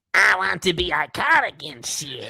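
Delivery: put-on cartoon sailor accent. Reading a line aloud to the others in a Popeye accent. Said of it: "I'm going to read this in a Popeye accent".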